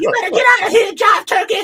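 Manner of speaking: very high, loud, shrill voice rattled off fast. Riffing on a drawing after another suggests a voice: Geraldine voice. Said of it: "Flip Wilson doing Geraldine to do that".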